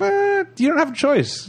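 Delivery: high, slow, mocking tone.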